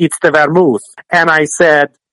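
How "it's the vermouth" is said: put-on Italian accent. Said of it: "he yelled at me in Italian accent".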